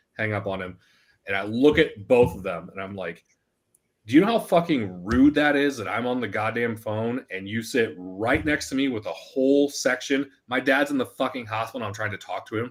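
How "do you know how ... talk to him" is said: ordinary talk, nothing marked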